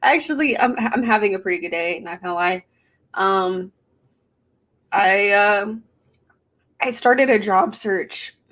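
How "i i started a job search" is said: slow voice breaking mid-line. Chatting about their day, voice cracking. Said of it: "my voice cracked".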